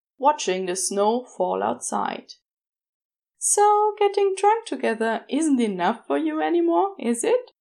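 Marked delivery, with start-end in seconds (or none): 3.4-7.4 playful, teasing, pitched a little high. The angel Aziraphale teases Crowley. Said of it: "The angel teased".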